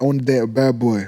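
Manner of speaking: plain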